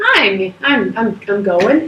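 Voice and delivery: voice cracking and breaking. Answering a greeting from the other speaker, voice cracking. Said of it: "weird voice crack moment".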